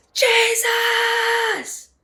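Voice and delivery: very high, loud screamed cry. Retelling screaming a name during a frightening encounter: imitating own scream. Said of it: "That's how I'm screaming it".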